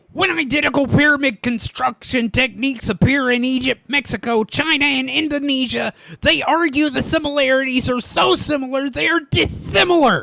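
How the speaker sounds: high-pitched, spitting, spraying cartoon duck voice. Read a quote aloud to the others on the show as a partly Sylvester impression. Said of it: "I'm essentially doing an impression of".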